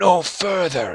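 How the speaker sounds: tired, thin ghostly voice. Voicing a dust shade that stops the players: tired, reedy voice. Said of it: "it says in a tired, reedy voice".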